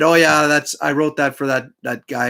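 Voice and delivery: ordinary talk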